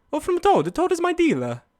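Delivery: swooping, sing-song cartoon Italian accent. Speaker doing a joke bit, then explaining it: Mario voice. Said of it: "I'm doing a fucking Mario voice".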